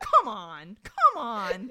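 very loud, booming, swooping, furious acted yell. Retelling another guy reacting to him crying, imitating someone getting mad. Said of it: "He gets so mad".

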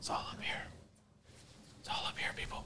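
soft, hushed creepy whisper. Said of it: "Creepy voice".

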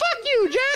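rising question-like tune on the final word. Showing how inflection alone makes a question: questioning inflection. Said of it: "It's just the inflection. Yeah, like, watch this".

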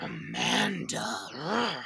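soft, primal, animal growl in the throat. Retelling how Pej reacted when Amanda was mentioned, imitating Pej's primal growl. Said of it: "the growl that escaped from his jowl".

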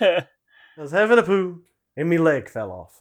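unconvincing fake Irish accent. Voicing an alien turd in a picture, in a bad put-on Irish accent. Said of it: "That wasn't even really an Irish voice".

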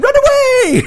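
yelled knight character voice.

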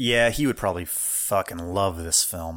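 disdainful tone. Saying a close friend would love the film: disdainful tone. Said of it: "I love the disdain in your voice".

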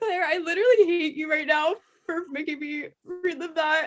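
crying while speaking, tearful. On a podcast, telling co-host Claire about a heartbreaking line, crying while speaking. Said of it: "I'm literally crying".

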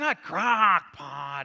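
very loud, acted disgusted, horrified protest. Retelling how the kids react when the crock pot comes out, imitating kids saying it's horrible. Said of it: "they would say it like it was horrible".

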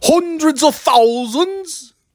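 very high, failing put-on British accent. Speaker attempting a UK phrase after saying they can't, failed fake British accent. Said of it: "I can't do the accent anymore".

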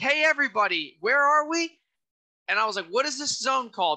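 shouting. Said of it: "I literally yelled".

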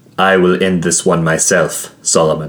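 ordinary delivery

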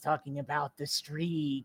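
eerie prophet-like murmur, very deep and very soft. Describing a video package narrator, the speaker imitates his creepy seer voice. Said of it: "His voice is like this".

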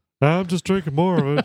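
put-on Texas drawl. Quoting a man's reply about Bud Light, the speaker does a Hank Hill voice. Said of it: "he sounds just like Hank Hill".

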